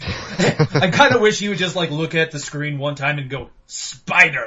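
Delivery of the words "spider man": creepy put-on villain voice, lower and louder. Imagining an actor looking at the screen, creepy Green Goblin voice. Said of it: "In his creepy, like, Green Goblin voice".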